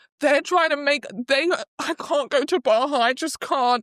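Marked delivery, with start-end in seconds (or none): 1.8-3.8 put-on weepy, sobbing, tearful crying voice. Retelling a scene where she is immediately crying: imitating someone crying. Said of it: "She's immediately crying".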